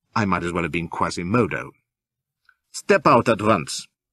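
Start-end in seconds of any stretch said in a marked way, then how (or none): 2.7-3.9 icy, cold, clipped, deliberate, curt snap. The woman's companion ordering the narrator out, cold, clipped snap. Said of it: "snaps he in a cold, clipped voice".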